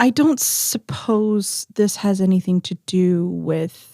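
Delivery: secretive, uneasy, confidential tone, leaning in close. Storyteller voicing an uneasy woman leaning in toward the group, lowered voice. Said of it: "lowers her voice and leans in".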